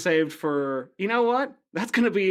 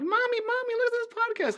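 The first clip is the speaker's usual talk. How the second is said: put-on little child voice, very high. Imagining children hearing the podcast, calling their mom: imitating a child. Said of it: "children are listening to this, like".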